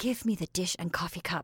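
whispered with impatience. She whispers impatiently to Joe, who is joking about staying. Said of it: "she whispered impatiently".

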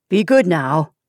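said sharply. A man holding a weeping child tries to calm her: said sharply. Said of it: "he said sharply".

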